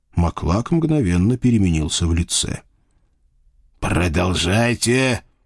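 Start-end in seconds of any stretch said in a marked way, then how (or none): 3.8-5.2 hissed in a lower pitch. Maklak tells the narrator to go on, hissed. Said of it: "прошипел он".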